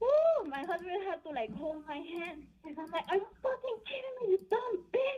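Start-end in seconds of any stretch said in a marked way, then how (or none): 3.1-5.2 mock, very high-pitched, outraged screaming outburst. Retelling her own past words to another woman: retelling a scream. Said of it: "I was already screaming at her".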